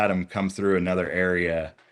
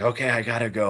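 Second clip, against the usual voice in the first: mock breathless whisper, higher pitch; 5 semitones higher than usual. Retelling what a woman hiking out said, the speaker is retelling a breathless whisper. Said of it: "she's like whispering, she's all out of breath".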